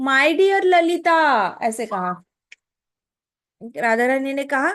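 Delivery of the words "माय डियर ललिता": acted-out loud calling out. Telling a story where a character calls loudly to all her companions, retelling a loud call. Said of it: "सारी सखियों से जोर से बोला".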